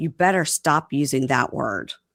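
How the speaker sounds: ordinary talk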